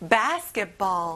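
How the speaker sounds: "ball" in "basketball" slow and drawn out.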